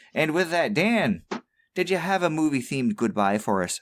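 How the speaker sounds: put-on mild Irish accent. Podcast host ending the show, asking the co-host for a goodbye, slightly irish accent. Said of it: "doing a slightly Irishy accent".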